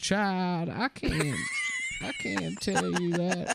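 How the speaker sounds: soft, hushed all-knowing voice with swooping pitch. Speaker retelling how they answered people asking why, in an Oracle from the Matrix impression. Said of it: "I say to them like the M- Oracle from the Matrix".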